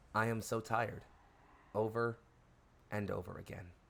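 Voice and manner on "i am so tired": hushed whispering voice. Voicing a thing in the static that keeps repeating: whispering voice. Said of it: "It is whispering".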